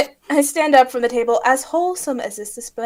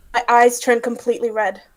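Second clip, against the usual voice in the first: ordinary talk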